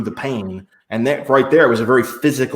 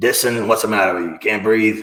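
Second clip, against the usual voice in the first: very gruff coach-style voice. Retelling a practice, the speaker quotes the coach calling to him, in a gruff coach voice. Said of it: "the coach said in this real gruff voice".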